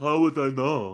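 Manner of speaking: put-on strained, deformed-sounding voice. Retelling a TV character's reply, imitating him: Elephant Man voice. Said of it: "He sounded like the fucking Elephant Man".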